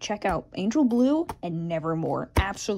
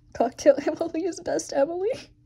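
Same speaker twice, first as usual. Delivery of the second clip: trembling, pitched-up voice that cracks mid-line; 9 semitones higher than usual. Speaker presenting a drawing, shaky with a voice crack. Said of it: "That was really shaky and a voice crack".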